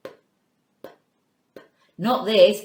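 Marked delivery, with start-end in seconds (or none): 0.0-1.6 whispered quiet little puffs of p. Showing learners how to say the letter sound: quiet p sound. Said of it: "The quiet sound".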